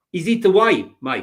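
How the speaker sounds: put-on South African accent. Discussing an upcoming fixture with a co-host, in a put-on South African accent. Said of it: "why we're doing South African accents".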